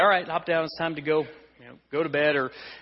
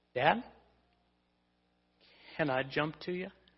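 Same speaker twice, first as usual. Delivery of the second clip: put-on soft, quivering little-girl voice; 8 dB quieter than usual. A father recalls his daughter at the bed's edge asking him: imitating a quivering voice. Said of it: "with a quivering voice".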